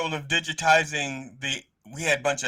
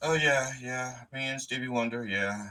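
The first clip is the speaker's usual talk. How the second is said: put-on unfazed, nonchalant tone, much quieter; 3 semitones lower, 6 dB quieter than usual. Retelling the speaker's mother looking at old photos, imitating an unfazed mother. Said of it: "my mother is totally unfazed".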